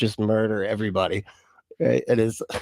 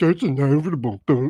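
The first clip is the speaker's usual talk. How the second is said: put-on derisive mocking parody voice; 4 semitones higher than usual. Retelling how a man answered someone: imitating his mocking voice. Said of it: "he uses the voice".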